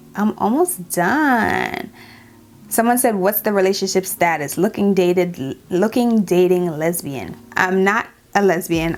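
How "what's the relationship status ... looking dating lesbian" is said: normal talking voice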